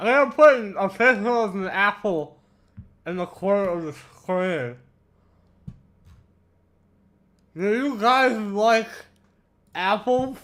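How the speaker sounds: talking while chewing, mouth full. Chatting on stream while eating an apple, talking with mouth full. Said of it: "I got an apple in my mouth right now".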